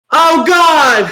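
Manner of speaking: very high, loud, alarmed panicked yell. Recounting a teacher mentioning a tornado warning in class, retelling a yell. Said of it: "And I just yelled out".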